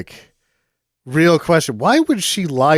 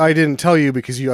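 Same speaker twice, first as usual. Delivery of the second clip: ordinary talk, nothing marked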